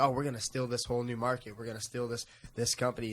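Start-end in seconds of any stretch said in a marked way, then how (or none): none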